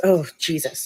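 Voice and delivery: put-on muttering under breath. Retelling a seatmate's reaction on the plane: imitating muttering under his breath. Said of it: "under his breath".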